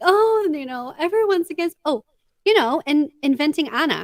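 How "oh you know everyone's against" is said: over-acted fake crying with high crocodile-tear sobs. Describing a film villain playing the victim, mimicking their fake cry: imitating a fake cry. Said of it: "they do this fake cry".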